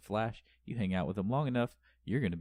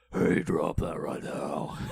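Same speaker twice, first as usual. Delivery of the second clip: deep, loud, cheap fake lowered voice; 4 semitones lower, 6 dB louder than usual. Imitating a TV hero's voice-changed lines: imitating Arrow's lowered voice. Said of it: "it lowers his voice".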